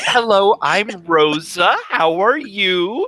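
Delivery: put-on high, slow toddler-style voice. Rosa introduces herself to Lionel, in a talking-to-a-little-kid voice. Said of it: "in a very like talking to a little kid voice".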